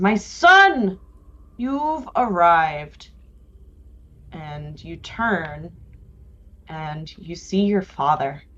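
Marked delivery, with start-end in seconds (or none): 0.0-3.1 booming voice, higher and slower. A narrator voices a father greeting his arriving son in a booming voice. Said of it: "you hear a booming voice that says".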